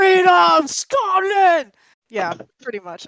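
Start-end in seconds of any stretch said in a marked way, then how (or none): 0.0-1.7 very loud, high-pitched rallying battle-cry scream. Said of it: "when you scream Scotland".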